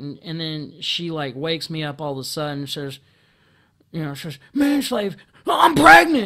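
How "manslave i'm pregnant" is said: mock-excited shout, much higher and louder. Retelling how she woke him up before daylight, retelling an excited, loud shout. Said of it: "like all excited and loud".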